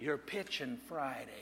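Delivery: soft, hushed stage half-whisper. Telling a joke, a spirit delivering the bad news: half-whispering. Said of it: "Virgil whispers back".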